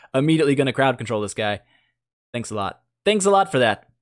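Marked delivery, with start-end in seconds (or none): 2.3-3.7 dry, sarcastic, ungrateful tone. Complaining during a game about being crowd controlled, with sarcastic thanks. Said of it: "That's that's sarcasm".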